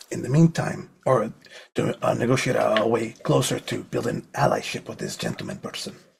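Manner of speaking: speaking in a hushed whisper. Explaining a plan to the others, whispering. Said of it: "Because you're whispering".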